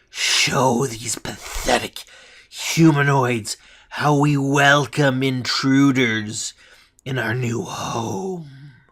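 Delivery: sibilant, hissed, dragon-like voice. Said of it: "She hisses at the kobolds".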